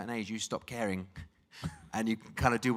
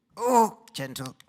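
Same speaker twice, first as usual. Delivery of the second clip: put-on loud, high, hollering old-man voice; 9 semitones higher, 8 dB louder than usual. Storyteller slipping into the character Albert, in Albert character voice. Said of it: "Let me get into Albert".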